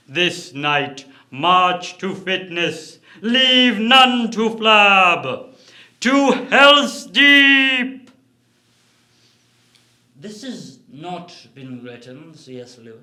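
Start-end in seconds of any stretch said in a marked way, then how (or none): 0.2-8.1 very loud, booming, slow, drawn-out, rousing evil-wizard voice. An evil wizard addresses his army of orcs on personal health: Saruman's speech to orcs. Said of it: "In the chapter, the evil wizard [name] gives a speech to his army of orcs about the importance of personal health. / In the chapter, the evil wizard [name] gives a speech to his army of orcs about the".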